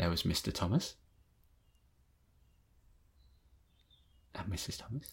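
hushed, very soft, long pauses between words. Reading a story about a cat called Mog: long pauses between sentences. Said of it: "And then I leave longer pauses between the sentences".

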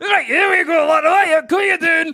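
put-on Scottish accent, very high-pitched and loud. Imitating a doctor coming in: put-on scottish accent. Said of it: "If a Scottish guy comes in".

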